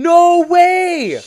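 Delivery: very high, loud, full-on shriek. Reacting in surprise to who sent the package: screaming. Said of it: "I'm, like, screaming".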